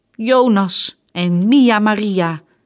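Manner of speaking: loud, very slow, drawn-out crying out. Lotta answers her mother's question about who hit her Bamsie, calling out. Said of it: "riep Lotta".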